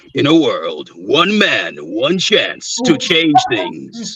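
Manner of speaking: dramatic, slow, swooping movie-trailer announcer voice. Actor of thirteen years shows the voice he can do: movie-trailer announcer voice. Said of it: "I can do that announcer voice".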